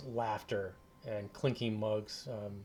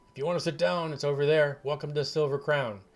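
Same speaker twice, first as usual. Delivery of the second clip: very loud, gruff, burly bartender voice; 5 semitones higher, 9 dB louder than usual. Narrating a game, voicing the man behind the bar pointing to a table, rough voice. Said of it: "he kind of talks in this like really rough voice".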